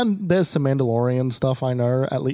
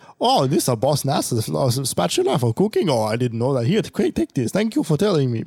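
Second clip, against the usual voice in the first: put-on goofy alien creature voice. Retelling a game's side mission in a Gungan voice. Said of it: "do you like my Gungan impression?".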